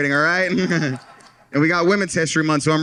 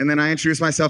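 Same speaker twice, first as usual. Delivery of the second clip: normal talking voice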